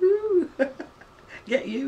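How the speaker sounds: playful teasing.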